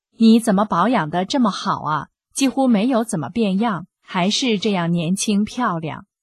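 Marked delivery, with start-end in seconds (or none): none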